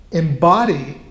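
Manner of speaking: embody slowed, with heavy stress on the word.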